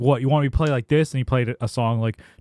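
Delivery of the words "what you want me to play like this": mock angry, indignant, pissed-off voice. Retelling a drummer's reply after being asked to tone it down: imitating someone pissed off. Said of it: "He got so pissed".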